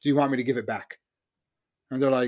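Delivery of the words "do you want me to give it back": fake sarcastic delivery. Retelling a general's boast about capturing a city: imitating Patton being sarcastic. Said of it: "sarcastic th-, things that he's doing".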